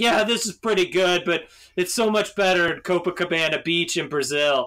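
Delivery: put-on words smeared together, drunk. Retelling a drunk woman next to her in a New Year's crowd, imitating drunken slurring. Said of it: "she was just slurring through her words like".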